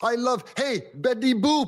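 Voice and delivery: high, slow, eager-to-please German soldier voice. Retelling a movie scene of a captured soldier pleading: German Nazi from Saving Private Ryan. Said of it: "They sound like the German Nazi in Saving Private Ryan".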